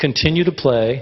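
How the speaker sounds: plain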